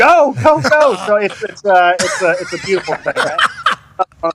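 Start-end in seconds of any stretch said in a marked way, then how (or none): 0.0-0.9 very high, loud yell of "go". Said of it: "you're yelling".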